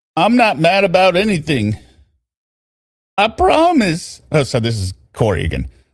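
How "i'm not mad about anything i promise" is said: put-on American southern accent. Doing his version of a man's accent, the speaker tries a southern accent. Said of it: "trying to do a southern accent".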